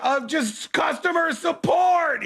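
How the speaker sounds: put-on very high, unraveling shriek. Retelling yelling at an automated phone menu: imitating own screaming. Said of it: "I'm screaming and just melting down".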